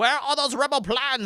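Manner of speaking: put-on high, loud Scottish accent. Retelling how the original actor sounded as Vader: imitating a Scottish actor's voice. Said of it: "And his voice, like".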